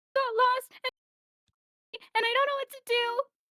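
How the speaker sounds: speaking through very high-pitched sobs, wailing. Playing a character who goes up to an old lady, sobbing. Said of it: "full sobbing going up to this old lady".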